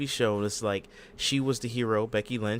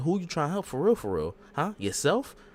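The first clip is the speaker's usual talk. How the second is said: pointed, swooping, finger-wagging accusing tone; 5 semitones higher than usual. Retelling a wrestling segment, imitating Raquel Rodriguez accusing. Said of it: "pointing the finger at us like".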